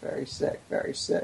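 very soft whispered aside under the breath.

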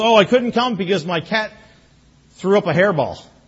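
straight-faced, matter-of-fact, dead serious tone. Retelling a man's excuse for missing sunday: imitating a straight-faced excuse. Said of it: "And straight face".

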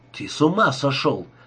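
ordinary delivery, nothing marked

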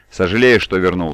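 plain

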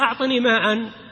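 ordinary delivery

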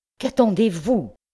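anger bursting out in a high, furious shout. A gentleman whose anger has just burst out; shouting.

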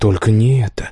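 plain

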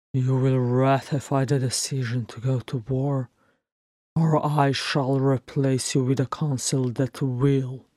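ordinary delivery

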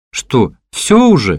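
disbelieving. Misha responds to the narrator, disbelieving. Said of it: "не поверил Миша".

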